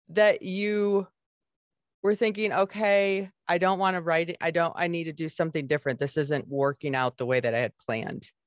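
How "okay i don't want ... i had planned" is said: ordinary talk, nothing marked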